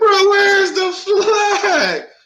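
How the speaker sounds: screaming, very high and outraged. Retelling how they screamed over a missed call: retelling a scream. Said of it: "I'm screaming like".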